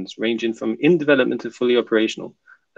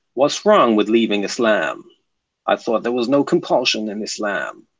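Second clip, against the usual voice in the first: put-on American accent. Reading a commenter's message aloud, in an american accent. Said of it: "I have to do the American accent".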